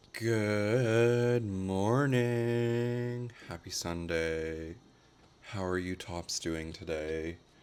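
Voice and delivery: raspy, hoarse, tired, weary voice. Greeting viewers on a sunday morning: raspy, tired voice. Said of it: "If my voice sounds raspy and tired".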